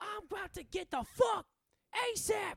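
mock very loud, high, shrill, performed angry yell. Retelling a woman performing anger for the camera, imitating a loud angry yell. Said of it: "trying to be so loud".

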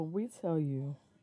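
speaking quietly, nearly whispering. Told by the others to talk into the mic, she keeps talking low. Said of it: "She's talking low".

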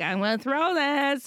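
put-on Irish accent. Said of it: "I have to do an Irish accent".

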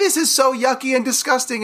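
put-on play-acted, very high, upset little girl's screaming. A father retells his daughter's accident, imitating daughter screaming. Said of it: "And she's screaming".

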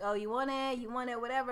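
ordinary delivery

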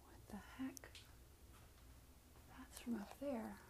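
soft, unvoiced, muttered whisper.

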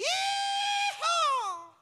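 shrill, loud yee-haw.

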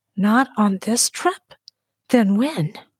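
hushed whisper. Gripping the chair and bracing, the narrator puts the question to him, whispered. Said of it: "The weight stole my voice and I whispered".

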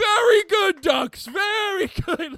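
put-on screaming. Telling a story about a man screaming at ducks, retelling a scream at the ducks. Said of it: "he starts screaming at these ducks".

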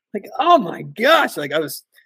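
ordinary talk

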